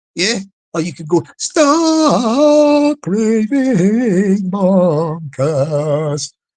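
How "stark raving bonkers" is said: very slow, drawn-out echo effect. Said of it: "That's like an echo effect".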